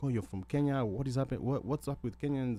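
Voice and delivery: normal talking voice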